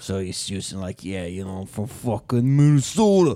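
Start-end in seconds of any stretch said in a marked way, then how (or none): 1.0-3.4 put-on New York tough-guy accent. Retelling the character's line again: imitating a New York hitman. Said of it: "he's a hitman from New York".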